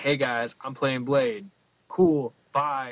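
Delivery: offhand, casual, tossed-off delivery. Reenacting an actor's appearance on stage, imitating Mahershala. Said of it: "this is how my reenactment".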